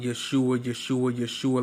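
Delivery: plain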